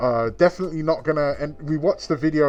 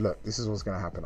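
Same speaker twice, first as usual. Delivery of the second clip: whisper, lower and quieter; 6 semitones lower, 10 dB quieter than usual. Retelling whispering to a companion during a sales presentation: retelling a whisper. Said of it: "I whispered to her".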